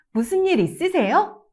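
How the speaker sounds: overly bright, chirpy, too-chipper, high and loud. Showing how a Korean question sounds when overly cheerful. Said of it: "If you say it too cheerfully".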